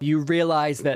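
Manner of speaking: plain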